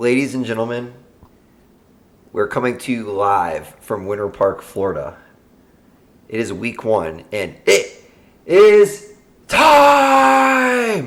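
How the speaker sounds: swooping, drawn-out, big ring-announcer intro voice. Opening the podcast episode, going for a Bruce Buffer impression. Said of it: "you trying to go for the Bruce Buffer there?".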